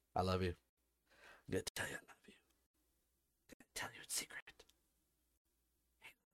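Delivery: very hushed, soft, breathy, secretive whisper. Speaking to listeners, whispering. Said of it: "whispering to you".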